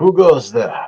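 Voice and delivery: rough, gruff, booming, very loud voice. As the listeners approach a drawbridge, a voice calls out: gruff, rough voice calling out. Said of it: "a gruff, uh, a rough voice call out".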